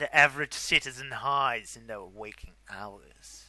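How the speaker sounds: put-on theatrical, dramatic narrator voice. Reading a horror story aloud to a friend: dramatic storytelling voice. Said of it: "What with the fucking voice?".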